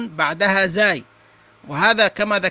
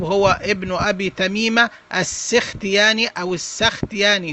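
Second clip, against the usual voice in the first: ordinary talk, nothing marked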